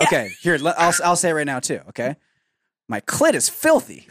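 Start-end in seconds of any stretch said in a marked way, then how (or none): 2.9-3.9 slower put-on New York accent. Saying the line again for the recording, in a New York accent. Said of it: "that was a New York accent".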